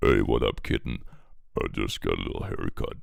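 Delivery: voice dropped very low. Acting out Click after a haircut, in a low Click voice. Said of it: "The lower Click's voice, the shorter his hair".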